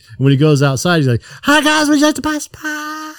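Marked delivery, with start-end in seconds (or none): 1.4-3.1 put-on voice, pitched very high. Retelling a man going outside to sell pies, imitating a high-pitched voice. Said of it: "he does it like in a high-pitched voice".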